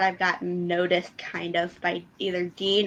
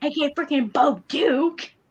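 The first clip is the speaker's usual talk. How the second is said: high, freaking-out, starstruck fanboy gush. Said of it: "he was kinda freaking out".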